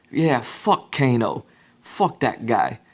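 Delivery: put-on Boston accent. Retelling what a character says about Kano, in Cabal's Boston accent. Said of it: "hear a Boston accent".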